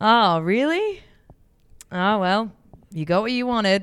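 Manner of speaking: mock crestfallen, deflated, disappointed, loud and slow. Retelling how a husband reacted to a pregnancy announcement: imitating a disappointed husband. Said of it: "and he goes".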